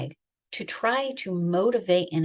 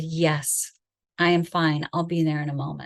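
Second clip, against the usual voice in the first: weak, tearful voice forced to sound steady; 3 semitones lower than usual. Retelling answering through the closet door: retelling fighting back tears. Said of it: "fighting back the tears and trying to cover the weakness in my voice from crying".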